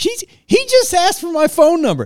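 very high, swooping, loud yell with laughter. Retelling how she yelled to the other passengers, imitating someone yelling. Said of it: "like yelling".

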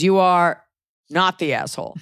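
slow, dramatic, suspenseful pause after you are. Speakers joking that there is always a pause: dramatic pause after you are. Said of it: "It's always a pause".

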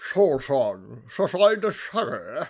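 loud, booming, slow, drawn-out film-star voice. Joking about a film character, a speaker does a Sean Connery impression. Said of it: "That was a great impression".

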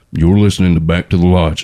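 big-mustache saloon cowboy voice, talking through the mustache. Showing how men with large mustaches talk: Sam Elliott voice. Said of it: "whenever I talk in his voice".

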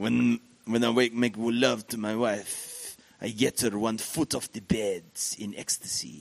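put-on French accent. Telling a joke, voicing the Frenchman in a pub: put-on French accent. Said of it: "We'll do the French person".

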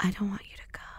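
soft, breathy, barely voiced hushed whisper. Retelling a tearful talk between a couple: imitating Peter whispering. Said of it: "Peter starts whispering".

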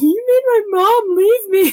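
put-on very high, shrill, loud, whiny little-boy voice. Retelling what a character said to Sydney, imitating a whiny boy.

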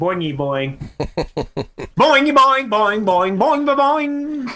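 high nonsense babble. Joking after a riddle, the speaker babbles in a Swedish Chef gibberish voice. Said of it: "Now you're sounding like the Swedish chef on the Muppets".

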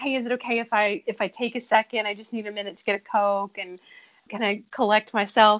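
ordinary delivery

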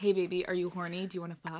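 fake soft, sultry American accent, porn-star style. Asked for their best American, the speaker does a porn voice: put-on sultry American accent. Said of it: "give me your best American".

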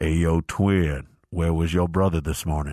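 dropped deep voice calling out. Retelling being called out in a stairwell: imitating Juwan Howard's deep voice. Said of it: "I hear this deep voice behind us".

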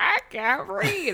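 high, slow, freaking-out whining voice.

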